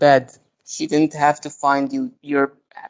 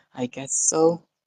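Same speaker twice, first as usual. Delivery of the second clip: soft, utterly defeated tone; 6 dB quieter than usual. Recapping a scene, mimicking how a character answered, mock-defeated. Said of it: "sounded really defeated the whole time".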